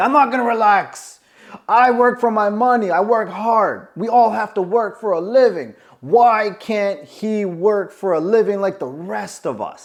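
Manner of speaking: furious, heated tirade. Retelling what a woman said when told to relax, acting out anger. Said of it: "really angry".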